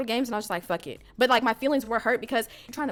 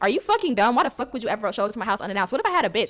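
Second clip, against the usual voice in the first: mock angry, scolding tone; 4 dB louder than usual. Retelling a phone call the next day, imitating him scolding her. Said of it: "he got on my ass".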